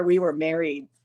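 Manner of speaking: ordinary delivery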